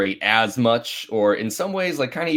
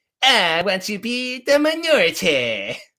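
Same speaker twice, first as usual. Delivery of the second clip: very high, squeaky, drawn-out cartoon voice; 9 semitones higher than usual. Speaker announces an impression, then does it: Cartman voice. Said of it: "You get to hear my impression now of Cartman".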